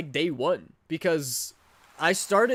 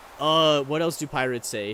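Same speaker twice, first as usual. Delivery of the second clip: ordinary talk, nothing marked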